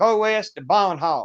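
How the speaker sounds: put-on slow, mangled German with Southern American accent. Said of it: "I mangled it up so bad".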